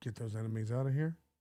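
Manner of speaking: very quiet, low, hushed half-whisper. Retelling how he half-whispers to a mod, half-whispering. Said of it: "he whispers to like a mod".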